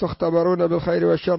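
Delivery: ordinary delivery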